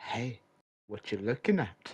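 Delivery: soft, breath-only half-whisper in character. Half-whispering in character behind a man: half-whispering in character. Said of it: "I just whisper".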